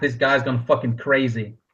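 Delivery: normal talking voice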